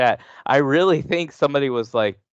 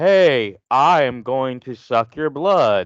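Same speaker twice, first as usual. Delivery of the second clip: flat, unacted read-out delivery; 2 semitones higher, 4 dB louder than usual. Mocking an actress who reads her lines flatly: imitating Megan Fox's flat line reading. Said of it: "she's literally reading".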